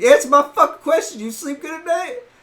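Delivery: very loud, high-pitched, enraged furious yelling. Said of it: "I started fucking yelling".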